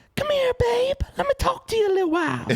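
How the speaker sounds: high-pitched coaxing call. Retelling a scary movie from a first nightmare: Itsy Bitsy Spider voice. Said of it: "That's how he talks".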